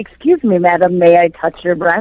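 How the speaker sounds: excessively courteous, deferential, overly polite delivery. Joking about how an overly polite canadian guy would talk: overly polite canadian guy. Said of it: "a Canadian guy would be like".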